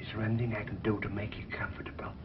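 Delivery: whispering. Asking someone whose foot has gone to sleep if they need anything, whispering. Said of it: "What are you whispering about?".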